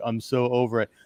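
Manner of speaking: put-on flat bored drone. Mocking how the show's bounty hunters talk, in a put-on bored monotone. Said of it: "talk in a bored monotone".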